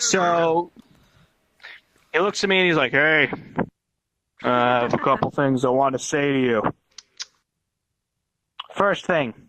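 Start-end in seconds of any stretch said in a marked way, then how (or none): 2.9-9.3 low, deep, droning voice. Retelling what a heavily medicated guy said to the speaker: imitating slow deep voice. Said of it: "he talks really slow and deep".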